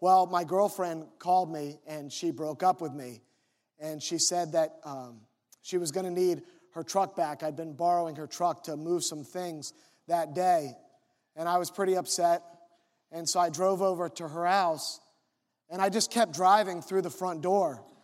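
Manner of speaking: normal talking voice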